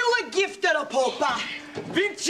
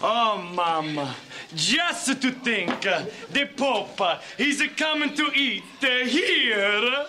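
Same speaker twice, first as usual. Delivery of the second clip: terrible fake Italian accent, drawn out; 10 semitones lower than usual. A character in a 90s sketch comedy speaks, in a terrible fake Italian accent. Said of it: "doing basically the worst Italian accent in the history of the world".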